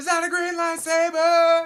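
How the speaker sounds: high, slow, drawn-out top-of-the-lungs shout. Retelling what was yelled at three thirty in the morning: retelling a yell at full volume. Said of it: "I yelled at the top of my lungs".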